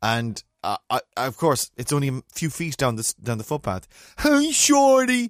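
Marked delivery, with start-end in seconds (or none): 4.2-5.3 high-pitched called-out shout. Retelling a man calling out a few feet down the footpath, retelling a shout. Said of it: "And he's shouting sort of".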